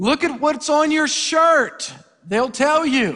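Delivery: put-on high, drawn-out yell. Telling a joke, wife answers her husband: imitating a wife yelling back. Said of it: "the wife yelled back".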